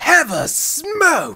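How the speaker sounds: very high, very loud belted shout. While fighting a katana duel, trying out a Monsoon voice. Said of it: "I'm gonna try a Monsoon voice".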